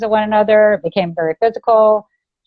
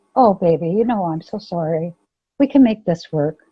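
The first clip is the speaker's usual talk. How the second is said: play-acted, suddenly sweet, honeyed, placating, pleading voice; 3 semitones lower than usual. Retelling how the attacker suddenly changed: imitating him suddenly sweet. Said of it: "Like this, right?".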